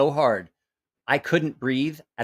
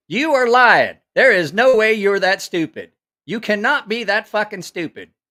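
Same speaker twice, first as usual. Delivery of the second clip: loud, high, berating drill-sergeant tirade; 8 semitones higher, 7 dB louder than usual. Retelling a drill sergeant tearing into a recruit: imitating a drill sergeant berating. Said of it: "a drill sergeant tearing into a recruit".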